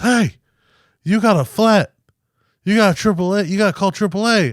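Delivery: put-on shrill, very high, loud holler. Retelling the tow truck guy calling out in a parking lot: imitating someone yelling loudly. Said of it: "hella loud in the parking lot".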